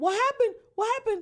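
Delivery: very high, loud, shrill, frantic scream. Retelling his sister's reaction after hearing he was shot, retelling frantic screaming. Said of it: "she started screaming".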